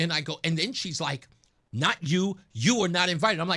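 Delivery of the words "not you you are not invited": put-on incensed, enraged woman's voice. Retelling what a woman told him while walking in: imitating an incensed woman. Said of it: "she just gets more and more incensed".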